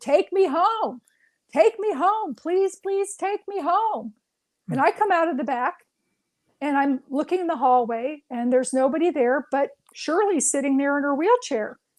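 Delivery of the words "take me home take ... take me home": high-pitched shouted yell. Retelling a patient heard from the back: imitating someone yelling.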